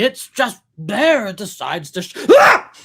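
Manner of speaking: very loud, booming, high, fired-up charismatic preacher delivery. Describing a man slipping into his preacher self, charismatic preacher voice. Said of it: "getting kind of into his like charismatic, like preacher kind of self".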